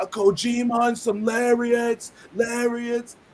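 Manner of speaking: slow, high-pitched, absent-minded repeating. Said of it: "He could do a good Homicide voice".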